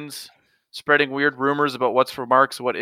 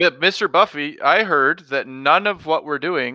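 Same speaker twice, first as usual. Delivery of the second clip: ordinary talk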